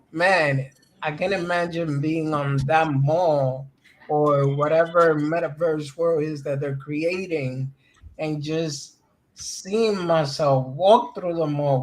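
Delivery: ordinary talk, nothing marked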